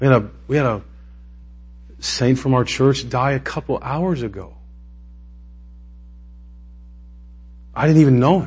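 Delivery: choked-up voice, catching and breaking with emotion. A speaker tells listeners about a member of their church who died, choking up. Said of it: "I don't know why I'm choking up".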